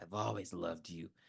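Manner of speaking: unsettling, creepy tone. Retelling a movie scene where the killer speaks while dancing: imitating a creepy line. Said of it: "it was just very creepy".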